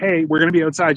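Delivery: plain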